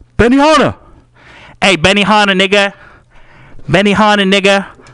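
reenacted screaming. Recounting screaming at a man signing t-shirts from twenty feet away, retelling a scream. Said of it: "I screamed at him".

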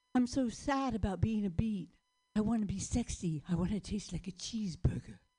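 sexy, seductive character voice. On stage, the performer plays a beet wanting to be sexy: sexy beet impression. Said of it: "It's my sexy beat impression".

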